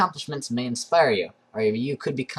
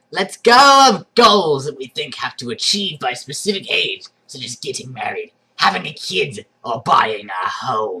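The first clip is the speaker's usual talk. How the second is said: very loud, menacing, sinister villain voice; 8 dB louder than usual. Reading an article aloud, the speaker slips into an evil voice. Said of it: "that like your evil voice?".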